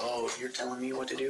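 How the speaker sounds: ordinary talk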